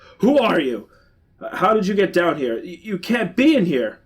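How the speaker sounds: high, angry, accusing voice. Reading a story aloud, the old man confronts an intruder: angry. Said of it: "addresses me angrily".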